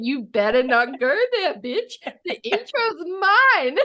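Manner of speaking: bristling, territorial voice. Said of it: "You're like".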